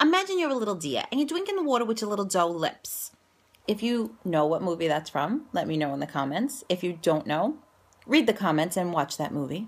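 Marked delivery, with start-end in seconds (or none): 0.0-3.1 Staten Island New York accent. A Staten Island native shows how they used to sound, in their old Staten Island accent. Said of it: "I sounded a lot like this".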